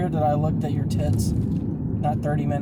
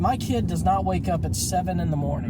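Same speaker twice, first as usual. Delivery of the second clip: ordinary delivery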